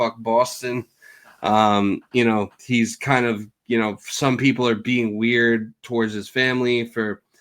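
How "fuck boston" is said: ordinary talk, nothing marked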